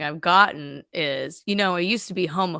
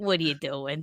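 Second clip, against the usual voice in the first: put-on bitter old person voice, lower; 4 semitones lower, 8 dB quieter than usual. Joining the other speaker's bit about bitter old people, in a mock bitter old person voice. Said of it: "I always love those just bitter old".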